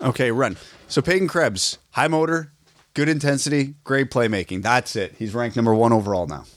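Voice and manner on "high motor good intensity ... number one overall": dry, sarcastic, tongue-in-cheek tone. Teasing another speaker who runs off to the washroom: sarcastic tone. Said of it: "were said in a sarcastic tone".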